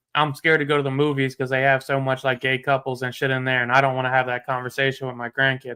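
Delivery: ordinary talk, nothing marked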